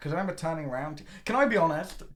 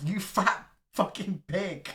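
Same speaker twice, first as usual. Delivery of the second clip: drawn-out shout, acted out; 3 semitones higher than usual. Retelling a friend's group-chat reply: retelling an all-caps message as a shout. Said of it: "in all caps".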